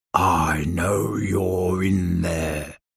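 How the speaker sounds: rumbling bass voice, very deep and slow. Reading a story aloud, a speaker calls to Mister Tickle in the bush: very deep rumbling voice. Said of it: "rumbled a very deep voice".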